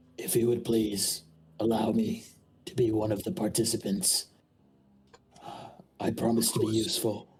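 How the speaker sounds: hushed, very quiet voice. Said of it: "saying this very quietly for not the king to hear".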